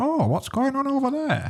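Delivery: put-on very high, sing-song, swooping elderly woman voice. Imitating an elderly woman passing by the robbery: impression of an old biddy. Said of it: "Great impression of an old, an old biddy there".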